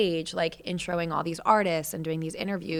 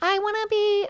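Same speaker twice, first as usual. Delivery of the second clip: put-on high little girl voice. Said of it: "they're just like".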